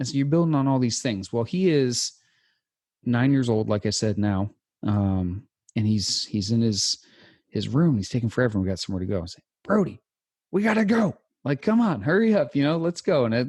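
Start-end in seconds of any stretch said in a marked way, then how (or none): 9.6-13.2 high, barking drill-instructor voice. Hurrying his nine-year-old son brody to get going: drill instructor voice. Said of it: "the drill instructor voice inside of me".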